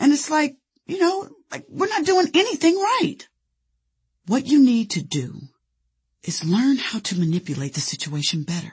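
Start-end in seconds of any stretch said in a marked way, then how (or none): 0.0-3.3 high, sputtering indignant rant. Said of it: "I sputtered".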